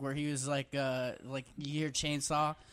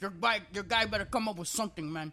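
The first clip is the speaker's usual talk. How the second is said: put-on angry outburst, pitched higher; 5 semitones higher than usual. Retelling a scene where Scarface flips out while washing dishes: imitating Scarface flipping out. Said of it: "he's just, like, flipping out".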